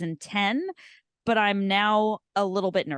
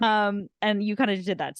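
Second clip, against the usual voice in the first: ordinary talk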